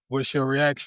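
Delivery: ordinary talk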